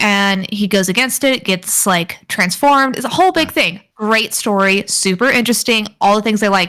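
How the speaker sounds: normal talking voice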